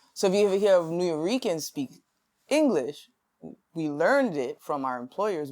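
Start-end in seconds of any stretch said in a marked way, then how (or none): none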